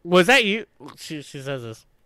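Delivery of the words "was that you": furious, high-pitched voice, laughing while speaking. Retelling how the other person confronted the speaker in the bathroom: imitating someone asking angrily while laughing. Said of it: "very angrily, but laughing".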